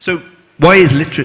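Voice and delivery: very loud, overloud shouting. Speaker giving a talk on literacy to an audience, accidentally shouting. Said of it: "excuse me, shouting".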